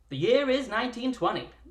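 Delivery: put-on old-fashioned radio announcer voice. Opening a story, announced in an old-timey radio voice. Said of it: "I will now adopt my old-timey radio voice".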